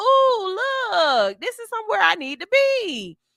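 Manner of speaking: delighted little caterpillar voice, high, swooping, drawn out. Voicing a caterpillar that lands on a boy: imitating a delighted caterpillar. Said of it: "That caterpillar said".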